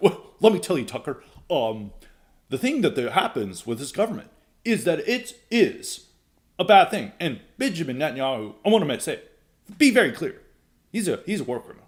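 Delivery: speaking like an AI chatbot. Imitating how a candidate talks in interviews: imitating Fishback talking like ChatGPT. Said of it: "he talks like a chat G P T".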